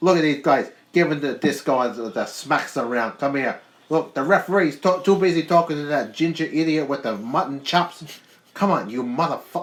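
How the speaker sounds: New York mobster voice. Doing commentary on a match in one voice, as a Joe Pesci impression. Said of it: "sound like Joe Pesci".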